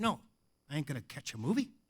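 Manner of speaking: casual, offhand put-on Australian accent. Retelling what a guest asked at the hotel desk: imitating an Australian accent. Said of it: "this Australian guy sits down".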